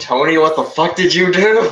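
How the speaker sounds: all-out shrill, loud screaming. Voicing a caller over the phone: screaming. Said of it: "a familiar voice screaming".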